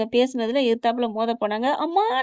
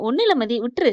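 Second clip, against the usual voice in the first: ordinary delivery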